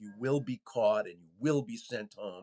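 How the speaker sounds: low, fast, ominous delivery. Retelling a Homeland Security PSA heard in a diner, mock-ominous Kristi Noem voiceover. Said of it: "a really ominous kind of tone".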